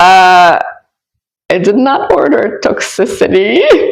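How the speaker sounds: speaking while laughing through the words. Telling a listener about a person they manifested, laughing while talking. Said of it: "Sorry, I'm laughing".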